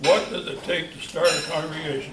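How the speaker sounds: ordinary talk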